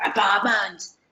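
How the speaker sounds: growling voice like a tiger. Showing how students can repeat a keyword: saying it like a tiger. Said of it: "say it like a tiger".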